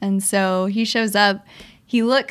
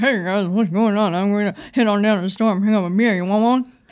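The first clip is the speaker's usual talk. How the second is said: mumbled, half-swallowed words throughout. Showing how the friend who always mumbles talks in King of the Hill, mumbling Boomhauer impression. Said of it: "that was a really good boomhauer impression".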